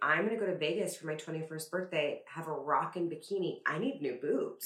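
ordinary delivery

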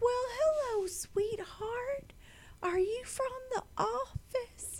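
put-on very high, soft old Southern woman's voice. Retelling a visit from the office to a woman with a walker, imitating an old Southern woman. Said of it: "Old Southern woman".

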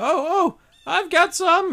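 very high, loud hag voice. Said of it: "say that to the group of hags".

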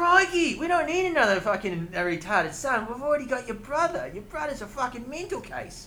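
put-on Australian accent. Speaker redoes a quoted line, now in an australian accent. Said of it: "I got Australian. It's like".

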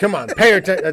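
yell cut off mid-word. Showing what he wants to shout at his son: mock yelling. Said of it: "that's what I wanna yell at him".

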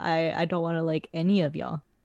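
ordinary talk

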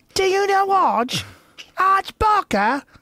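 very high, loud, bad fake Australian accent. Retelling what people in Sydney asked him, use a bad Australian accent. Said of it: "That's probably a bad accent".

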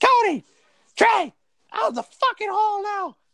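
mock very high, drawn-out, unhinged shrieking scream. Recalling a class project, the speaker imitates her suddenly screaming at the boys. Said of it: "she just starts screaming like a lunatic and says".

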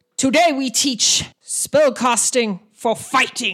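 big, booming, rolling voice. Gashak addresses the group after their walk from the camp, booming Gashak voice. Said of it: "his booming voice rolls out and he says".

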